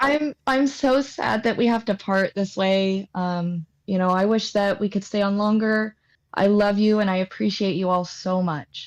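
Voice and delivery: mock-heartbroken, longing, sad yearning tone. Podcast host saying goodbye to listeners at the show's close, in a longing, heartbroken farewell. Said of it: "You gotta say it like you're longing for them".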